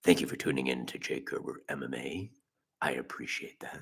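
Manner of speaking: hushed, whispery, breathy creepy radio host voice. Speaker thanks listeners for tuning in, doing a creepy radio voice. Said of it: "Just do a creepy ass radio voice".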